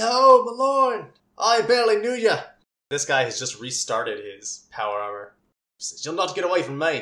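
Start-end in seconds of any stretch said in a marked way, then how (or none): 6.0-7.0 put-on fast, very posh upper-crust Australian accent. Game narrator voicing an armored enemy running forward, very posh australian accent. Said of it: "With his very posh Australian accent".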